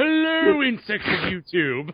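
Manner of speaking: put-on, pretentious-sounding mock British accent. Doing an impression after being asked for one: put-on pretentious British voice. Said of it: "That's way too British".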